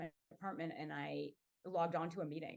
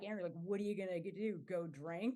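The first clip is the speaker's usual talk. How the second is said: put-on cold, unloving tone. Retelling how the remark about going to drink was said: imitating a remark said without love. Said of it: "it wasn't said with a lot of love".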